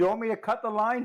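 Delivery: loud, high-pitched shout. In a role-play scene, calling down to someone hanging below on a line, shouting down. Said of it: "I shout down".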